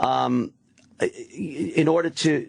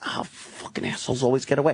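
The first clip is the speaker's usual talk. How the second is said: acted, mock-frustrated muttering; 3 semitones lower, 3 dB quieter than usual. Speaker acts out a man muttering while on a call, retelling a frustrated mutter. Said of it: "he's muttering".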